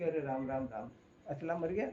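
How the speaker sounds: ordinary delivery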